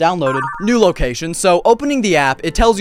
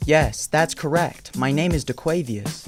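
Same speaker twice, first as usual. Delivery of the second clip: fake chatbot-style voice; 7 dB quieter than usual. Interviewing an AI, the speaker answers for it, in an impression of the AI's voice. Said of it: "I'll do my best impression of her voice".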